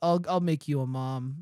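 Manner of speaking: ordinary talk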